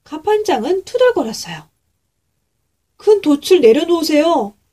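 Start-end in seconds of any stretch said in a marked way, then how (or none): 2.9-4.5 urgent, pressing, urging delivery. Hudson presses the grumbling boatswain a second time, urging again. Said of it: "허드슨이 다시 재촉했어요".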